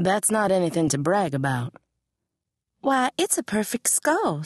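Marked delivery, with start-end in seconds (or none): 2.8-4.4 astonished, surprised, pitched-up exclamation. Narrator voicing Queenie, surprised that he is not impressed. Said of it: "surprised that he was not impressed".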